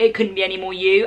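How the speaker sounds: ordinary talk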